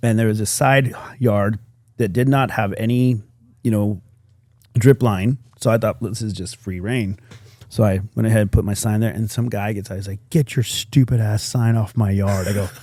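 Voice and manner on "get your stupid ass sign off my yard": put-on angry, bitter, resentful scolding voice. Retelling what a man said about the speaker's sign in his yard, mock-angry and bitter. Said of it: "But just angry, bitter".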